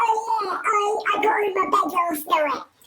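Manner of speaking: very high, wailing, mocking silly voice. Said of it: "calling out and making".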